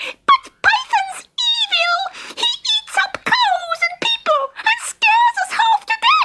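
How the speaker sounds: very high, squeaky, disguised put-on voice. Narrator reads a character speaking from the other side of a hole, in a squeaky voice. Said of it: "said in a squeaky voice".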